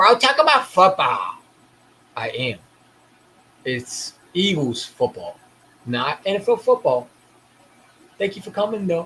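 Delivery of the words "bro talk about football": very loud, whiny, nagging, complaining voice. Mimicking what commenters probably said, mock-whiny voice. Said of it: "if I said it in a whiny voice like you probably did in the comments".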